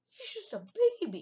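cracking squeal, very high and loud. Showing a level 1 aerodactyl to viewers, voice cracking again. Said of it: "Another voice crack".

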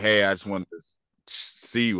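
ordinary talk

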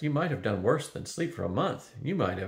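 ordinary delivery

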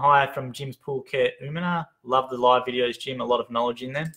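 ordinary delivery

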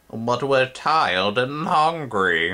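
high, drawn-out, whiny goblin voice. Goblins answer someone who told them to think for themselves, whining. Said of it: "the goblins whined".

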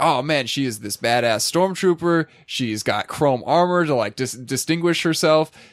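ordinary talk

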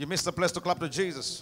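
ordinary talk, nothing marked

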